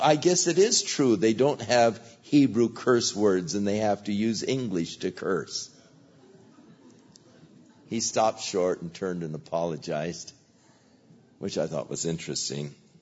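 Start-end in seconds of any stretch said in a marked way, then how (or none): none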